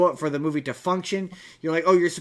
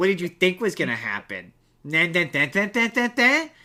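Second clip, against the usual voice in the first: mock arrogant, smug, swooping sing-song tone. Imitating Luke's line from the movie: smug Luke impression. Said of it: "having him come in with that tone of voice".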